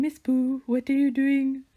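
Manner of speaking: high, lifted voice. Speaker retelling calling out to her farm animal Miss Boo, high-pitched pet voice. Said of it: "I had a high pitched voice for her".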